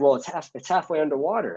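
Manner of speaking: spot-on put-on high-pitched voice of an older person. Retelling how Pep complained about the leaking boat: imitating Pep. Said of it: "you sound exactly like him".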